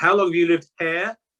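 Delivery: put-on East Anglian accent. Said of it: "the further up East Anglia you go, the stronger the accent becomes".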